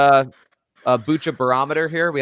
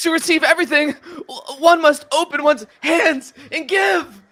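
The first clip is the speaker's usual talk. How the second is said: very high, slow, pained dying gasps; 4 dB louder than usual. Reading a bottle quote aloud after being asked: reading like just got stabbed. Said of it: "Read it like you just got stabbed".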